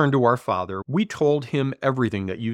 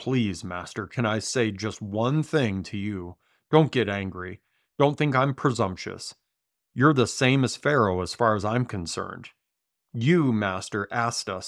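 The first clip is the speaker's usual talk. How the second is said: normal talking voice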